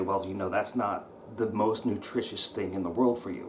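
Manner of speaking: ordinary talk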